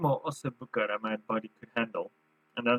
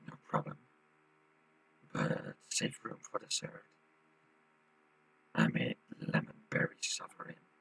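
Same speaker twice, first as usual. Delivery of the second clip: put-on breathy, whispered voice; 13 semitones lower, 6 dB quieter than usual. Voicing Robert offering dessert at dinner: put-on voice for Robert. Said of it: "Is that your voice for Robert?".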